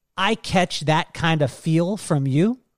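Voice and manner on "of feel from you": normal talking voice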